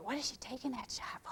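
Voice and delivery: soft, doubtful whispered aside.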